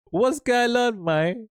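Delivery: very high-pitched words bubbling through laughter. Scrolling through bookmark search results, laughing while talking. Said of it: "I'm laughing 'cause I saw".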